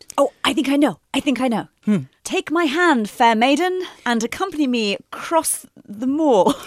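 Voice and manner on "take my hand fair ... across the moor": slow, badly done put-on British accent. Answering a question about film and tv diversity, in a bad british accent. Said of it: "Why did I do a bad British".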